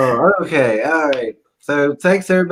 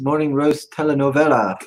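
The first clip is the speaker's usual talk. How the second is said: normal talking voice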